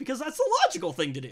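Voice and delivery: sarcastic, knowing delivery. Retelling a story about a smoking phone: sarcastic. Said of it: "I may have sounded sarcastic there".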